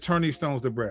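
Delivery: normal talking voice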